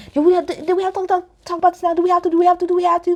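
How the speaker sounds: rapid-fire, very high-pitched babbling chatter. Retelling how she did not want to talk about it now, imitating Ramona talking real fast. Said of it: "Y'all know Ramona talk real fast".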